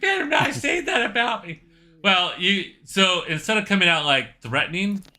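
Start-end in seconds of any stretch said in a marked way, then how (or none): 0.0-1.6 very high, intent, leaning in hard. Show how his intently said line came out not threatening, but in a Mike Tyson voice. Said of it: "comes out more like Mike Tyson".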